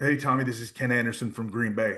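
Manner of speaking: ordinary talk, nothing marked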